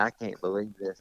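put-on real rural country accent. Retelling how a hunting companion reacted to a killed deer, imitating the way he talks. Country accent. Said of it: "he's got a real country accent".

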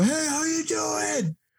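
put-on yelling.

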